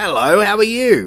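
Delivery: put-on full Australian accent, slow and high-pitched. Retelling how a voice in a shop greeted your three-year-old daughter, in Mick Taylor's full Australian voice. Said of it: "Full Aus- Australian voice".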